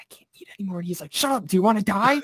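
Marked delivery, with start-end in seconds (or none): 0.0-0.8 very quiet, barely audible whispered aside. Retelling whispering to a cousin after being fed too much; retelling a whisper. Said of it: "I whispered to him after she went back inside".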